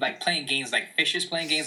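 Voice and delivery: ordinary talk, nothing marked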